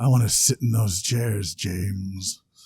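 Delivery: put-on sultry low voice. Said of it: "It got sultry and low".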